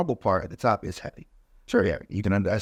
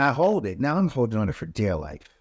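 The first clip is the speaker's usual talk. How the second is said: ordinary talk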